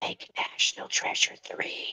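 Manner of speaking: delicate, soft, breathy whisper, barely voiced. Imagining holding a man's face and speaking to him, in a soft whisper. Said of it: "and whisper softly to him".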